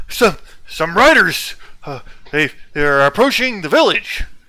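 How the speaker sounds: out of breath. Voicing a guard who runs up to warn of riders: panting guard. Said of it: "panting up to you".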